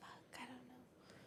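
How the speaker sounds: soft, slow whisper, half to herself.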